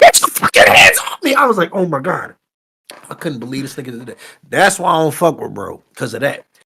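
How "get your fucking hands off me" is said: acted-out shrill, very high screaming outburst. Retelling what a man screamed at him at a convention, imitating someone screaming.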